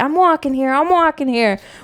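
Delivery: put-on movie-style New York accent. Quoting a favorite movie line the way the actor says it: imitating a New York accent. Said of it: "the way he says it is the way I like it".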